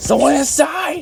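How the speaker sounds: mock, very high-pitched, angry shouting yell. Retelling a player who yells during the game: imitating a yell. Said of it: "this guy yells".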